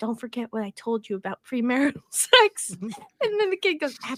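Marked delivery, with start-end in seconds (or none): 0.0-2.7 confiding, stage half-whisper. Acting out how she then half-whispers to the brother, retelling a half-whisper. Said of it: "And then whispers to the brother".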